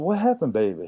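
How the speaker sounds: anxious, high-pitched motherly tone.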